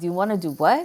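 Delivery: sassy, cheeky, defiant, daring attitude. Showing the way one talks to oneself, with a challenging attitude. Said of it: "Like that kind of challenging myself attitude".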